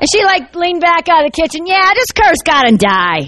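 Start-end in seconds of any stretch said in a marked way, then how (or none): 1.7-3.2 put-on New York-accented speech. Speaker acts out how she pictured a wife leaning out of the kitchen, new york accent. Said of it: "it's a New York accent".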